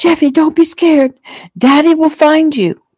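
very high, screamed delivery. A narrator reads a mother calling to her child being taken away: screaming. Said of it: "Shelley screamed".

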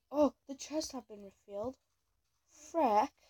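bad fake British accent. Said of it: "I don't know why I have a British accent".

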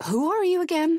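very high, stammering speech. A man faced with a scolding mother, stammering. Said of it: "stammered Walter".

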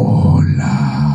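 very low, loud, strong wolf voice.

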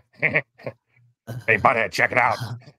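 very slow, drawn-out stock cartoon character voice. Asked to do Beavis or Butthead, the speaker answers in Beavis voice. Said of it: "that's a pretty bog standard Beavis".

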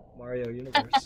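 normal talking voice

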